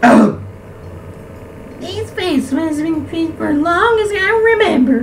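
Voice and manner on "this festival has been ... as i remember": much higher, attempted woman's voice. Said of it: "I can't do lady voice".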